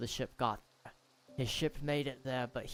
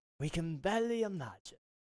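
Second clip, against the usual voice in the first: put-on cheerful British accent; 4 semitones higher than usual. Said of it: "He's kinda got that bright sounding British voice".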